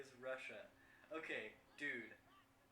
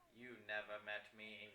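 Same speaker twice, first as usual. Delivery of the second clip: low, sinister evil wizard voice; 5 semitones lower, 4 dB quieter than usual. Voicing a chatbot's replies in a conversation, in an evil wizard voice. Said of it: "I'm doing like the evil wizard voice".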